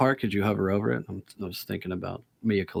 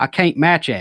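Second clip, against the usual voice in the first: put-on Kentucky accent, higher pitch; 6 semitones higher, 4 dB louder than usual. Reading a quote aloud from a developer named Hicks: Kentucky accent. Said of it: "Hicks is from Kentucky".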